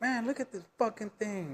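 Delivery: high, worked-up, angry outburst. Retelling a partner's words about a pregnancy test: imitating someone mad. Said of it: "she's all, like, mad".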